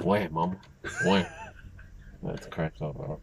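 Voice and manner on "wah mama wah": deep, weighty, heavy voice. Imagining a cartoon baby with a heavy deep voice: Stewie with a heavy deep voice. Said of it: "heavy, deep voice".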